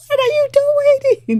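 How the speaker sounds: high-pitched yelling. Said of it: "like, yelling at the T V".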